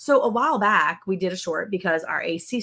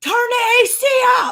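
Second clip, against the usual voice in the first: shrill, high, stretched-out drawn-out yell; 6 dB louder than usual. Parent recalls peeking out and yelling for one of their kids, retelling own yelling. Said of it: "I'm like yelling for one of my kids".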